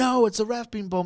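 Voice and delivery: very high, loud, hollow scream with no real passion. Mocking the reaction to a ref bump: imitating Michael Cole screaming. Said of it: "He just screams".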